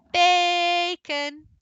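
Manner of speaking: first syllable bay in bacon held long, called out. Calling a dog named bacon, stretched bay in bacon. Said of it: "that bay is held".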